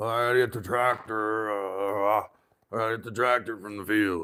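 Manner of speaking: put-on whiskey-soaked old man voice. Showing how their grandfather used to talk: grandfather's whiskey-soaked voice. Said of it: "That's the way he sounded".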